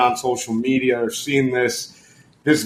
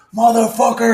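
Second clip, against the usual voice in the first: very high, furious, enraged shriek, acted out; 10 semitones higher, 4 dB louder than usual. Retelling how a boat captain reacted after falling: imitating someone screaming. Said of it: "screaming at the guy".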